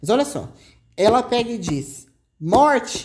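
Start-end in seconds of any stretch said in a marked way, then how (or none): 2.4-3.0 yelled out at full force. Reading a dramatic passage aloud, the character names her son: shouting.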